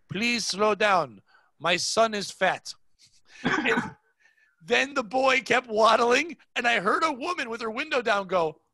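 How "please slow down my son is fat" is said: calm, heartfelt, sincere, earnest tone. Retelling what a father said to a passing car, imitating a sincere plea. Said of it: "no anger in his voice, all sincerity".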